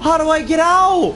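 high, loud, panicked cry.

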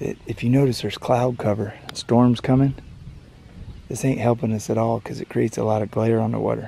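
whispered words. Out shooting fish, the speaker talks so the fish won't hear; whispering. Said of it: "And I'm whispering".

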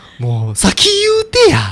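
put-on high, loud rant in a Kansai-style accent.

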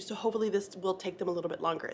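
fast, rushed, nervous chatter.

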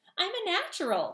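squeaky, very high voice. Reading a story, a young bird learning to fly squeaks to Roz. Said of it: "he squeaked".

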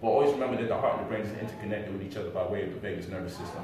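rushed, really fast run-through.

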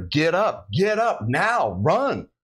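mock, very slow, high, stretched-out yelling. Retelling what the voice kept yelling at her: imitating yelling. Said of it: "it's yelling at her".

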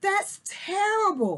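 gasping, very high-pitched exclamation. Reading a girl's reply to an oil-covered otter, gasping. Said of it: "Daisy gasped".

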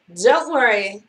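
ordinary talk

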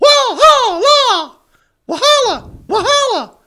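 shrill, very loud, very high goose honk. Showing how they call out Walhalla like geese, honking goose call. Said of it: "I like to say it like there were some geese".

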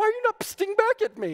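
play-acted exasperation, very high-pitched and frustrated. Retelling a mix-up when nobody answered the psts: imitating Bree frustrated. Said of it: "getting frustrated by this".

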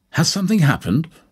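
very high-pitched, startled, surprised voice. Opening the door to an unexpected woman instead of the detective, speaking surprised. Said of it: "I said with surprise".

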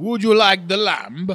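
put-on Greek accent. Asked on the spot to do a Greek accent, stereotypical Greek accent. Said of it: "can you do a Greek accent?".

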